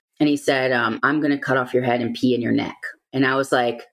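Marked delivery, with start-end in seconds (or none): 0.7-2.8 mock anger delivered in a calm voice. Retelling what a toddler once told the speaker, imitating a calm but angry threat. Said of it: "but saying it calmly".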